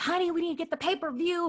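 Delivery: high, loud, laughing mock shout.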